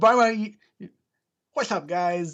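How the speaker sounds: very slow, attempted British accent. Doing the YouTube greeting from a book on getting rich, in an attempted British accent. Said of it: "I was trying to do a, U- a British accent".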